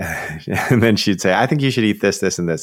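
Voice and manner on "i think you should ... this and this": put-on domineering bossy woman voice, much higher. Retelling what a woman told her partner, in a mock-domineering voice. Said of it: "She was so domineering".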